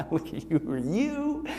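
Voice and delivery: put-on, very quiet, laughing, taunting jeer. Voicing the accuser laughing at a believer: imitating a mocking, laughing accuser. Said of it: "He's mocking you".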